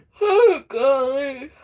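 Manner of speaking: mid-yawn. Apologizing to the group after little sleep, the speaker breaks into a yawn. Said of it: "I'm yawning".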